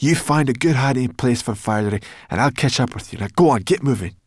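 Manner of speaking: hissed, pushed out hard. Sorrel, up a palm tree, speaks down to Ben, hissing. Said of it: "she hissed down to Ben".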